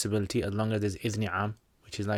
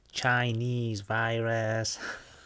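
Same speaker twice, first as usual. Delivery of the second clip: put-on American accent. Asked to do an American accent, the speaker does his Trump accent. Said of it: "This is my Trump accent".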